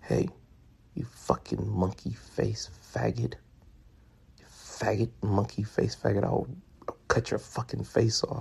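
loud, breathy whisper pushed to carry. Retelling a man locking eyes with them, imitating a loud whisper. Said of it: "he's whispering, but still whispering it loud enough".

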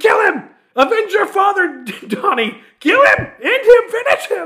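very loud, very high top-of-the-lungs shriek. Speaker retells yelling during a fight's finish at 5 a.m.; re-enacting own screaming. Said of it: "Screaming at the top of my lungs".

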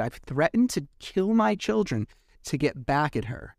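ordinary talk, nothing marked

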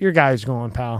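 whispering voice. Retelling a threat spoken at dinner: imitating someone whispering. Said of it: "He just whispers in his ear".

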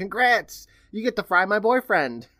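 mock shouted, high-pitched, carrying yell. Narrating a crowd scene, the storyteller voices Coralie yelling. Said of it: "Coralie yells".

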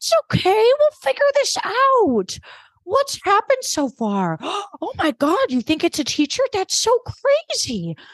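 very high put-on voice swooping around. Recapping a scene where Kate answers Mike, imitating Kate's high fake voice. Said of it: "Kate's voice goes up about 80 octaves".

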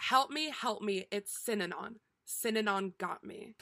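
ordinary delivery

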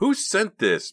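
very high, piercing, shrill accusing cry. Narrator reads a character's question before a staring crowd: shrill and accusing. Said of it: "her voice shrill and accusing".

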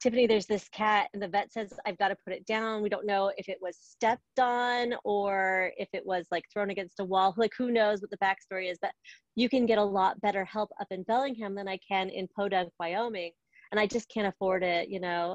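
ordinary delivery

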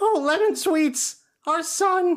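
very high-pitched cartoon voice. Co-hosts agree to do impressions of dramatic lines; one tries a voice, sounding like Shaggy. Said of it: "sounded more like Shaggy from Scooby-Doo".

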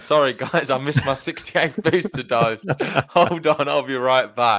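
talking through laughter. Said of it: "I shouldn't laugh".

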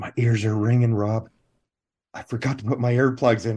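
put-on whisper. Retelling what a co-star said on set: retelling a whisper. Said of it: "he whispers in my ear".

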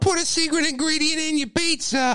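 shrill, very high-pitched screeching voice. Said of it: "that screeching voice".

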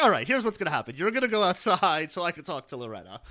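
ordinary talk

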